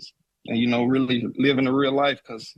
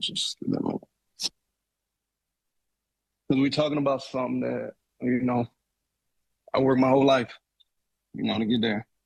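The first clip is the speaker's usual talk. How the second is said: choked up, quieter; 4 dB quieter than usual. Talking about retiring and the work it took, getting emotional. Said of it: "I'm getting emotional right now".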